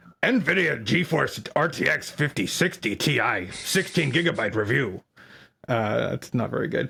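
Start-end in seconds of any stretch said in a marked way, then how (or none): 0.2-5.0 swooping, hammed-up, put-on cartoon voice. Speaker reads a graphics card review title in a Strong Bad voice. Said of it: "in the voice of Strong Bad from Homestar Runner".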